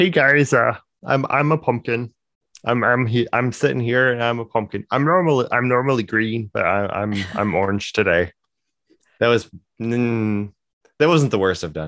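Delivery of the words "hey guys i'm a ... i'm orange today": put-on cartoon frog voice, slower. Trying out a voice while pretending to be a pumpkin, Kermit the Frog impression. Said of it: "I'm going to try though".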